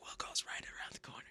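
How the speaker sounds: very quiet, breathy, hushed whisper. Retelling what the whispering staff said at check-in: imitating staff whispering. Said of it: "they're all whispering".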